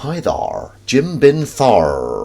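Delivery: put-on American accent. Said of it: "are you doing an American accent there?".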